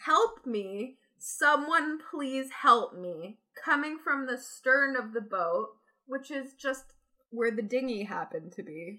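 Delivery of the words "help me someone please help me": woman's slow, drawn-out scream. Telling a story about a woman heard screaming from the boat's stern, retelling a woman screaming for help. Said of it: "a woman screaming".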